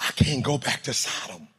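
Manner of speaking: low, soft, quiet, resolved, prayer-like under the breath.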